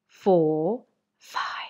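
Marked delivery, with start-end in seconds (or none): 1.2-1.7 soft whispered voice. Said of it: "whisper the ones, the odd numbers".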